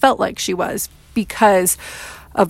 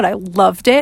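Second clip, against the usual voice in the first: ordinary talk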